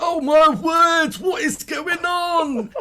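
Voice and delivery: very high, very loud, shrill little creature cry. Showing how a little pink tentacle character speaks, in a Mighty Boosh pink tentacle character voice. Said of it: "I do a really good impression of him from Mighty Boosh".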